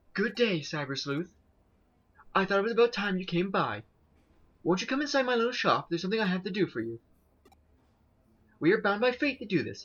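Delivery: high, reserved shopkeeper character voice. Reading a game character who rarely talks, greeting the Cyber Sleuth, in a quiet voice. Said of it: "kind of a quiet".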